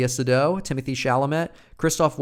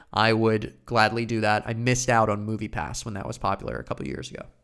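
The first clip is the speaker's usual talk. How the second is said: usual speaking voice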